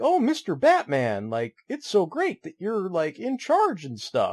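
high-pitched, swooping, sweet gosh-golly gee-whiz voice. Retelling how the comic character fawns over Batman: imitating sweet gosh-golly Guy Gardner. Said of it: "very kind of gosh golly gee willikers".

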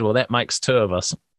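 normal talking voice

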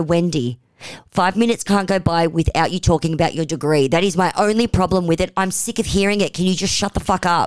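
plain

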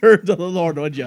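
loud, high-pitched put-on Irish accent. Voicing a cop character, irish accent. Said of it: "Tony immediately turned him Irish".

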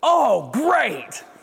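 very high, exasperated, fed-up dad voice. Demonstrating how a parent reacts to something broken at home, in a dad voice. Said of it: "That was my best dad voice".

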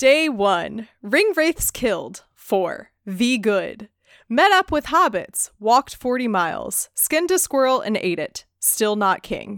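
dramatic storyteller narrator voice. Speaker reading a diary-style list aloud, in best narrator voice. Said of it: "my best narrator voice".

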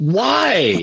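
mock, high, long drawn-out hollered shout. Retelling looking right at the customer: imitating his own shout. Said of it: "Can you stop shouting at our patrons".

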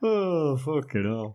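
put-on smirking villain voice. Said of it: "it was a little smirk on the whole thing".

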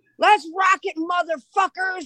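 shouted out, pitched very high, yelling. Retelling a son's first concert on stage: imitating someone yelling. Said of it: "Joe yells out".

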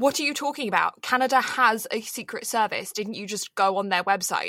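put-on strong British accent, argumentative tone. Retelling their own side of an argument with a canadian, strong british accent. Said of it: "I also had a very strong British accent".

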